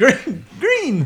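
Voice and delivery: very high, loud, squeaky puppet voice. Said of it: "That was a terrible Kermit".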